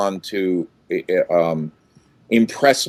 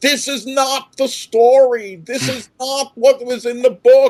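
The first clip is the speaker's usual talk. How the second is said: put-on screaming, pitched higher. Retelling how he stood up in a theater full of kids: imitating his own screaming. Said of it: "And I started screaming".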